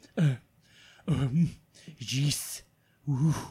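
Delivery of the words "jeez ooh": put-on meek cartoon alien voice. Showing another speaker an impression: Kif from Futurama voice. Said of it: "listen to my kiff from Futurama".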